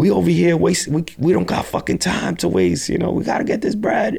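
put-on, very high, aggressive screaming. Retelling how he would scream at people to sell, acting out the screaming. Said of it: "literally screaming at people".

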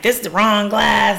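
ordinary talk

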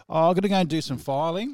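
put-on Australian accent. Retelling sneaking off to the filing room: imitating own past words in australian accent. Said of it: "I like that in that, in that Australian accent".

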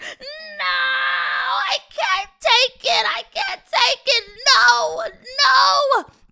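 very high, very loud, shrill, drawn-out wailing squeal. Reading a talking couch as the girls clean it, squealing. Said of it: "The couch squealed".

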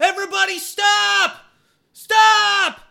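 mild yell with the word stop drawn out. Calling on fighting groups to stop and talk: yelling as loud as possible. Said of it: "I yell as loud as I can".

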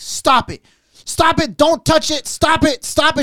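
play-acted very high, drawn-out, angry yelling. Retelling how Melissa got mad at the guy cleaning, imitating a woman yelling. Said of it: "She's yelling at the guy".

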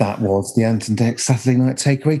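put-on TV continuity announcer voice. Retelling how a former continuity announcer read the links: imitating Jenny's continuity announcer voice. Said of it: "she used to do the links like".

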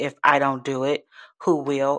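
normal talking voice

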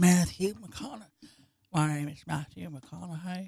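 very quiet, hushed murmur under the breath. Trying out an impression while chatting: Matthew McConaughey impression. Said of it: "I've been trying to do Matthew McConaughey".

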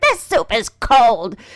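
loud, pretty snippy voice. Retelling what a woman said to her, in a mock-snippy voice. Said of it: "she gets a pretty snippy voice going and goes".

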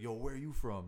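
put-on loud, drunken voice. Retelling how a drunk stranger at the pool table approached: imitating a drunk guy. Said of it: "he's, like, drunk and smart".

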